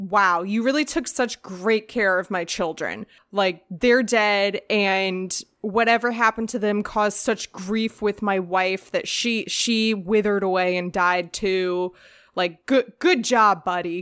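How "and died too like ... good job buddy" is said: ordinary talk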